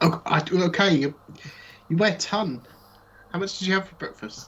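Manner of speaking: high, strained, heaving voice.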